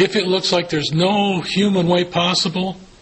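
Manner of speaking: the word human leaned on hard.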